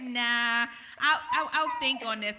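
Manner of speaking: loud, playful, dismissive put-on voice.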